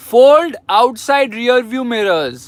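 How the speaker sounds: very loud, high-pitched, barked shout. Speaker repeats a command to the car's voice assistant, shouting. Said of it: "Sorry for shouting".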